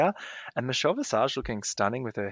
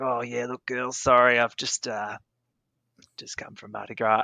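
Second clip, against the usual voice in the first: put-on husky, chain-smoker voice; 4 dB louder than usual. Retelling what a woman said to the girls, in a put-on husky voice. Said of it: "she's got this husky voice".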